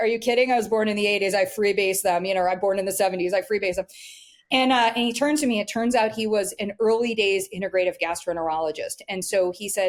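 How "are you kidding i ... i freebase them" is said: normal talking voice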